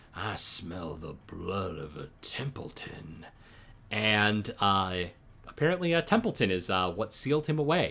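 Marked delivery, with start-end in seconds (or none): 0.1-3.2 very quiet, soft and creepy drawl. Retelling a story where Kuru pops out, Kuru's creepy drawl. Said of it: "in a real creepy drawl is like".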